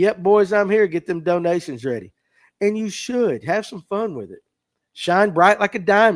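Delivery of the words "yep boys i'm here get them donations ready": plain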